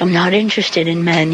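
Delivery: plain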